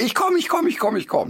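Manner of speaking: put-on very high, frenzied, frantic dog voice. Voicing a dachshund in high hunting excitement: imitating a frantic excited dachshund. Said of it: "rastet wirklich völlig aus".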